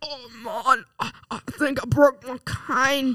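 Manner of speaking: put-on very slow, high elderly man voice. Performing a requested character, complaining about a broken cane: old man voice. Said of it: "let's hear the old man".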